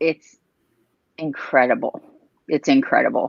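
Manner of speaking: teary, tearing up, emotional. Asked by the host what it means to her, a guest answers; tearing up. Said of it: "I'm tearing up right now".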